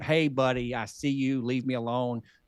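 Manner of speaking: ordinary delivery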